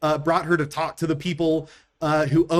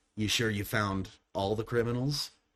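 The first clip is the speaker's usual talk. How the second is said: dark, almost raspy, very low and hushed voice; 7 semitones lower, 10 dB quieter than usual. Game master voicing someone unseen calling out from a tree, in a dark, almost raspy voice. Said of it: "almost raspy voice echoes out from the tree".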